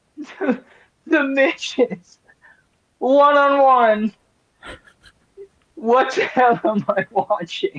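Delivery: put-on breathless laughter. Retelling what a co-host said while out of breath from laughing: imitating Jonte laughing out of breath. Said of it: "sounds like he is out of breath from laughing so hard".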